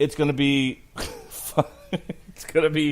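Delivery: laughing mid-sentence while talking. Speaker discussing a Boba Fett budget, distracted by his wife, laughing while talking. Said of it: "I'm laughing because my wife".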